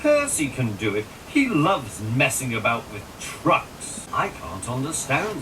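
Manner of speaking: ordinary delivery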